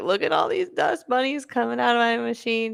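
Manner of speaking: high, tearful, weepy crying voice. Retelling showing dust bunnies from the machine to William: imitating own past crying. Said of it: "like, crying".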